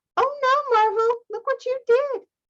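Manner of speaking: cartoon character voice, very high. Student who just dropped a beaker comments on it, cartoon voice. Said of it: "said in a cartoon voice".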